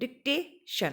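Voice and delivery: dictation pronounced dic-TA-tion, stress on second syllable. Hindi-language English lesson, modeling dictation with stress on the second syllable. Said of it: "stress हम second पे डालेंगे".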